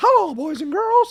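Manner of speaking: very high, airy cartoon falsetto with lots of air. Demonstrating a falsetto exercise for listeners to copy, Mickey Mouse voice. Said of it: "like you're Mickey Mouse".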